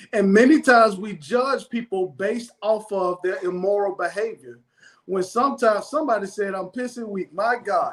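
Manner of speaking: plain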